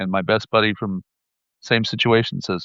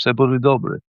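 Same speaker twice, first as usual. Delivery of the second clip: put-on calm, gentle, loving voice; 3 semitones higher than usual. Retelling what a mother said to the speaker, retelling calm, loving words. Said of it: "calmly, lovingly, and said".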